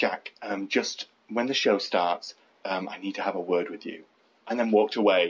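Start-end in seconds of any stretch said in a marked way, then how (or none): 0.0-4.0 hushed, discreet, deadly serious aside. Retelling what a manager said at a busy bar: imitating someone speaking quietly. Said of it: "kind of says quietly to me".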